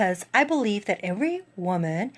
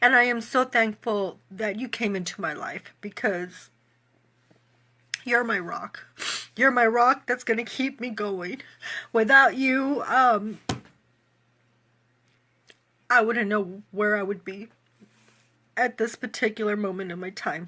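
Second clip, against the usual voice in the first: tearful, speaking while crying. A host thanking a guest, Miss Letitia, tearful and crying. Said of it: "I need to stop crying".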